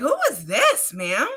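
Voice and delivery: put-on prim, proper, well-spoken kid voice, slow. Retelling a phone call where a boy answers, imitating a very proper kid. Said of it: "All proper".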